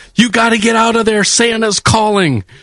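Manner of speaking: screeching yell, very high, woman's voice. Retelling a lady outside a porta potty: imitating a lady screaming. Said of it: "a lady screaming at a porta potty".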